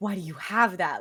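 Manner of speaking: loud, stunned, shocked, disbelieving outburst. Retelling how shocked the characters were: imitating a shocked character. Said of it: "I love how shocked they were".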